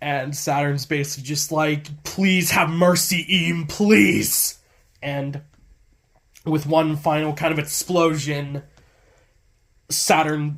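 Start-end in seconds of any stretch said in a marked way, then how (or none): 2.0-4.6 put-on pleading scream. Recapping the story, the speaker voices Saturn, imitating him screaming for mercy. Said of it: "he screams for mercy and beds Eam".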